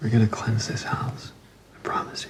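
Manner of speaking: whispered, breathy, soft and hushed. Retelling what a man says to Missus Green, imitating his soft voice. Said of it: "his voice always gets so soft".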